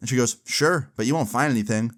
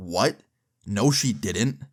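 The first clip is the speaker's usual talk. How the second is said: mock indignant, slow, defensive tone; 2 semitones lower than usual. Retelling a friend's reply to a theft accusation: imitating someone getting super defensive. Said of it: "he gets super defensive".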